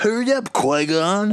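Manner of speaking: very high, snotty, stuffed-up nasal voice. Imitating the guy in something the other speaker sent, in a snotty nose voice. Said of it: "It's got like this snotty nose voice guy".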